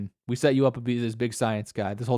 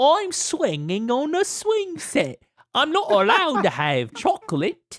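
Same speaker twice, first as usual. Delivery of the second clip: very high, swooping, sing-song fake British voice; 14 semitones higher than usual. Imitating how she talks, doing her put-on British 'oi, oi, Mister' voice. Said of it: "you you don't talk like that".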